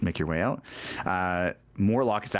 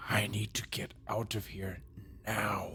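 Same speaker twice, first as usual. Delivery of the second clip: hushed voice, quieter; 3 semitones higher, 9 dB quieter than usual. Leaning in to another character in a game scene: whispering. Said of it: "I'm gonna whisper".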